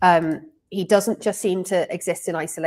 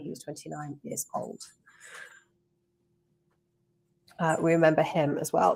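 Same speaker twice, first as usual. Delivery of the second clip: hoarse, failing voice, quieter; 6 dB quieter than usual. Reading out remembrance names while losing voice. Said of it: "I'm definitely losing my voice".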